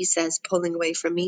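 ordinary delivery

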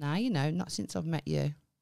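normal talking voice

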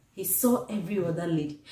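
ordinary talk, nothing marked

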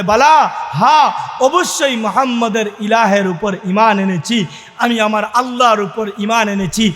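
ordinary talk, nothing marked

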